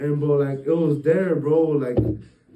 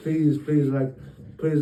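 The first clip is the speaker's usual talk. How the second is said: mock begging in a pleading tone. Retelling a scary night in bed, imitating own past begging. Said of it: "I was begging for my life".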